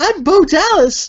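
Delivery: very high, weirdly happy guy voice. Imitating a weird happy character just described: Bo Dallas impression. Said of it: "a happy, like, weird, happy guy".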